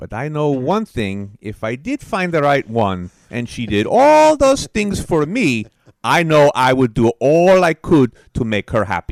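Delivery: loud, hybrid Eastern European and Spanish-sounding accent.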